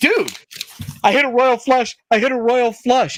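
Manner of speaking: play-acted, thrilled, eager, bursting-with-excitement voice. Retelling a night out, the speaker imitates a friend as a mock-excited friend. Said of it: "he's excited".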